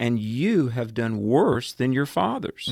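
ordinary talk

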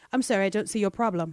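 mock indifferent, unfazed, unbothered tone. Acting out an unbothered church reply: put-on unbothered voice. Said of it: "Acts seventeen is like".

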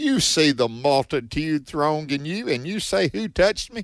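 put-on sassy, fed-up, exasperated, attitude-filled tone. Retelling the disciples' reply in a bible story: mock-exasperated, with attitude. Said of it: "I'm saying it with a little bit of an attitude here".

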